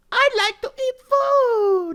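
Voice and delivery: very high, tiny, cutesy little voice. Discussing a scary scene, suggesting the line be said in a little cute voice. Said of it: "Like in a little cute voice".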